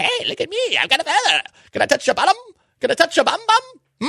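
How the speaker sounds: squeaky, very high, sing-song leprechaun voice. A show host quotes Tony Macaroni to a co-host: leprechaun voice as Tony Macaroni. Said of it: "Why do you sound like a leprechaun all of a sudden?".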